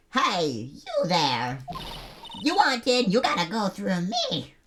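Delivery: badly done put-on old woman voice. Voicing a security guard stopping visitors: bad old woman voice. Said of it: "I can't do old woman voices".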